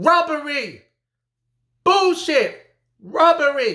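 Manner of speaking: mock enraged screaming, high and furious. Retelling a reaction to a stopped fight: imitating screaming at the tv. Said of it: "I'm screaming at the T V".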